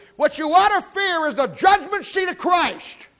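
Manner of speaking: shrill, very high, loud preaching-style yell. Speaking to an audience, yelling. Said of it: "Excuse me for yelling".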